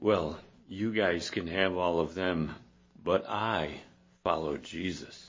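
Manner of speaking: smug, self-satisfied, arrogant, superior tone. Retelling how the ones in the corner talk, mock-arrogant tone. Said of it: "You can almost hear the arrogance coming out of that".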